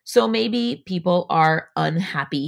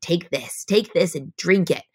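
put-on scary witch voice, slower. Describing a visualization, voicing a big scary witch offering poison: scary witch voice. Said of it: "I say it like a witch".

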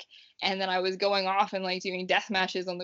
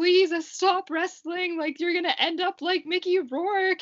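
play-acted, very high-pitched, tearful, bawling, sobbing plea; 10 semitones higher, 3 dB louder than usual. Retelling his mom's phone call, imitating her bawling. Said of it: "like just bawling her eyes out".

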